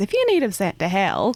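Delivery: voice dropped low to an undertone. Answering someone embarrassed about their father being saved last time: lowered voice. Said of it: "I'm just gonna lower my voice".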